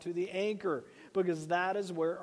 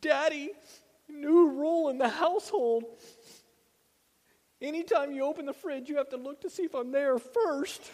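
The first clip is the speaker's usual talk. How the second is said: put-on tearful little-kid bawling, high and loud; 8 semitones higher, 5 dB louder than usual. Retelling his son's words while holding him in a chair, imitating a child crying. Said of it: "he's just crying".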